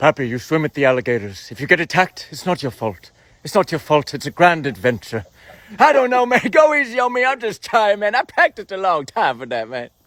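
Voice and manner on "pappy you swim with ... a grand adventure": very low, deep voice, pitch dropped way down. Paying tribute to him, the speaker does a Robin Williams impression for the audience. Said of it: "This is Robin Williams talking to me".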